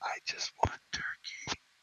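put-on tiny, barely-there whisper like a toddler. Retelling a teen ordering at Subway, speaker imitates her childish whisper.

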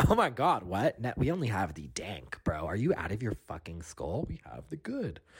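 put-on airy new-age young woman voice. Retelling the budtender's reply when asked for bad weed: imitating a crystal-loving budtender girl. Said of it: "And she was like".

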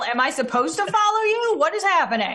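high, rising, shouted yell. In a role-play, calling after someone walking out of the bar: yelling. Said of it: "I just yell".

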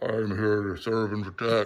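mock deep-voiced delivery. Retelling meeting a big bald guy signing autographs at a con, imitating a deep voice. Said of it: "With a deep voice".

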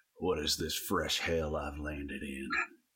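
whispered narrator impression. [name] looks around and talks to himself in a whispered Cormac McCarthy narrator voice. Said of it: "he wh- whispers to himself in his best. Cormac mccarthy narrator voice".

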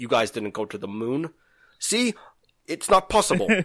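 put-on, fake Russian accent. Speaker voicing what the Russians would say, fake Russian accent. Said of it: "Stop with the accent".

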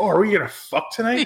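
mock excited eager voice. Retelling a movie scene where she gets excited: imitating someone excited. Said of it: "she gets all excited".

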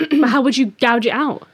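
overexcited, eager tone. Cutting in before the other speaker can finish answering, too excited. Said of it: "I'm getting too excited".

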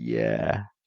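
embarrassed, sheepish voice. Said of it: "they sort of sheepishly went".

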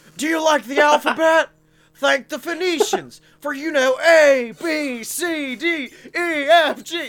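loud, high-pitched yelling. Imitating a ride narrator yelling about the alphabet: Nicolas Cage yelling. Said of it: "Nick Cage just yelling about the fucking alphabet".

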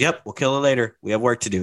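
ordinary talk

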